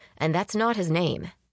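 plain

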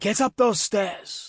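angry, high, drawn-out guard yell. Ayla yells at the chef, doing an angry guard impersonation. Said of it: "doing her best impersonation of an angry guard".

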